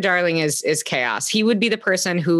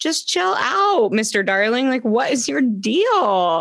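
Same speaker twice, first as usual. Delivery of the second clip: chill, relaxed, pitched up, with "deal" drawn out; 7 semitones higher than usual. Retelling how Missus Darling calmly answers: imitating chill Missus Darling. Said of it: "She's so chill".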